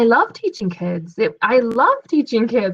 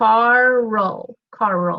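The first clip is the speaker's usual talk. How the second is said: word drawn out into two syllables. Showing a learner how to say the name: stretched into two syllables. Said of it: "We say it with two".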